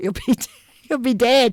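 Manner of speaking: laughing through words. Retelling a lawyer's words on the phone, laughing while talking. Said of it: "I can't even say it without laughing".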